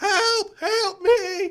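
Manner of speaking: very high, very loud shrieking scream. Voicing someone trapped in a cabinet: screaming for help. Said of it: "you hear inside the cabinet screams".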